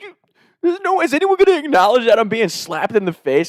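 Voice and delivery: angry ranting, pitched very high. Retelling a friend's complaint the next morning: imitating an angry rant. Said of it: "one of those type of angry rants".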